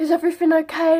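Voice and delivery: mock frantic, worried, high, loud voice. Retelling how her mum asked after the scan: imitating a panicked mum. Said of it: "really panicked".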